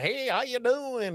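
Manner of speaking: put-on slow, high Central Illinois drawl. Explaining why a candidate could not win: Darren Bailey's accent. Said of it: "he wouldn't have a chance with his accent".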